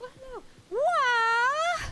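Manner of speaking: high wailing character cry.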